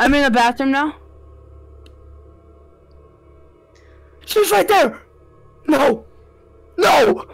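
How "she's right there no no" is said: panicking, freaking out. Playing a horror game as she closes in, freaking out. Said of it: "I'm freaking out right now!".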